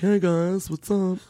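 robotic voice, high pitched, slow and drawn out.

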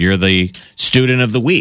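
ordinary talk

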